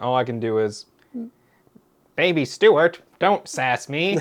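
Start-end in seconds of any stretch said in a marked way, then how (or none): 2.2-4.2 cartoon dad character voice. Comparing impressions with friends, the speaker offers a Peter Griffin impression. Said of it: "my Peter Griffin".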